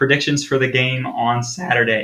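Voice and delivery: cracking, breaking voice. Host introducing the next segment of the episode, voice cracking. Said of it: "excuse me, voice crack".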